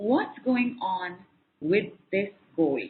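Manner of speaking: slow, deliberate, drawn-out delivery.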